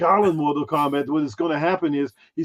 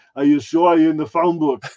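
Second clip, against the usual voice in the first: acted robotic menacing voice. Retelling how to scare people: Terminator voice. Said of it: "just do the Terminator".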